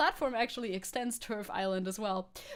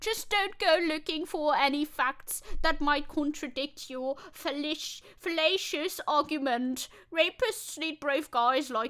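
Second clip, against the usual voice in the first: put-on British accent, higher pitched; 5 semitones higher, 4 dB louder than usual. Reading out a tweet by J K Rowling: put-on British voice. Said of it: "we gotta do a British voice".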